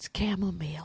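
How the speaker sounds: soft, hushed, barely-there whisper. Retelling what another woman said back to someone, retelling a whisper. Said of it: "Just whispered the words".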